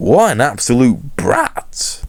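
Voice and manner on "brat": breathy voice crack on brat. Threatening to teach him a lesson, the speaker's voice cracks on 'brat'. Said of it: "Did the voice crack really need to happen when I said brat?".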